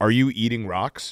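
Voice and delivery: bone-dry, level deadpan delivery. Speaker retelling what their son asked them, retelling a deadpan question. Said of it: "he deadpan was just like".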